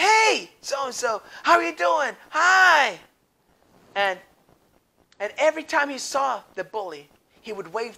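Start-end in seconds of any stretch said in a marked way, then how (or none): 0.0-3.0 loud, high-pitched shout calling out. Telling a story, acting out the boy greeting the bully: retelling a shout. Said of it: "he shouted to him".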